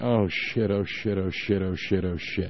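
soft, low mutter. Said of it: "just muttering".

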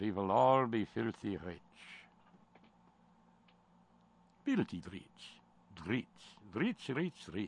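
terrible, exaggerated put-on Russian accent. Acting out a bit addressed to Don, in a terrible Russian accent. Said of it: "Terrible Russian accent time".

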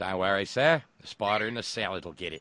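badly done put-on Australian accent. Reading a listener's joke aloud, in a bad Australian accent. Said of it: "with my bad Australian accent".

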